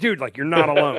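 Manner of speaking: usual speaking voice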